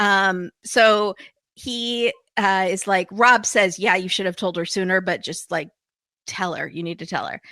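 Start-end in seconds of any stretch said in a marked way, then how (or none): none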